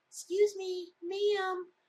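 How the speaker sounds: tiny, wee, very high little voice. At the opened door, someone unseen below addresses the speaker, in a little voice. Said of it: "I hear this little voice".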